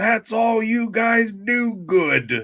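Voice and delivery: slow, high yell. Retelling a movie scene where Lou Brown yells at the team about excuses: imitating Lou Brown yelling. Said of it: "he's yelling about everybody making excuses".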